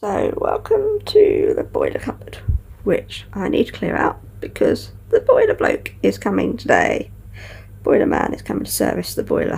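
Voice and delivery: sleepy just-woke-up voice. Recording a tackle day, showing the boiler cupboard to clear, sleepy, just woken up. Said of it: "I sound very sleepy because I've literally just woken up".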